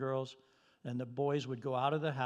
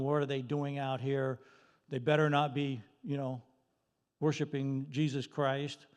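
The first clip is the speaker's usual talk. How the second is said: ordinary talk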